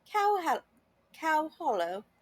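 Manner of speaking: improvised fake British accent. Saying a hotel's name after wishing to say it in a British accent. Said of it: "I wish I could say that in a British accent".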